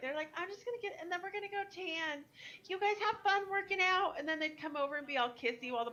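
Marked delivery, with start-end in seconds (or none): 0.4-4.2 put-on chirpy doll-like girl voice. Retelling what the gym girlfriends said to their boyfriends: imitating the itty-bitty Barbie girls. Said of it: "this is exactly what they sounded like".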